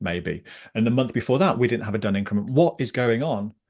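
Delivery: ordinary talk, nothing marked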